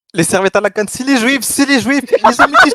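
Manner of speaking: put-on Arabic accent. Prompted by the other speaker to perform, in a put-on Arabic accent. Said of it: "envoyer cet accent arabe".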